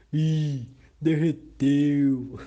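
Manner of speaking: loud, booming, thunder-like storybook voice. Narrator reading a story, voicing the beggar speaking to the girl, thunder voice. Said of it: "falou com sua voz de trovão".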